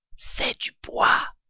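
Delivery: hushed whisper under the breath. A father fox hits something hard overhead and tells his child; whispered.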